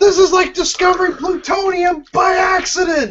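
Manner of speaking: high, shouted, total panic.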